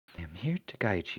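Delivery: gentle, soft, soothing, calming feminine voice. Narrating a telepathic voice the listeners hear, in a soft, calming feminine voice. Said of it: "it's a soft voice, feminine, calming".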